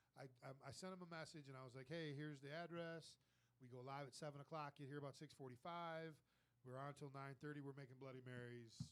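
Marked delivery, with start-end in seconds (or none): none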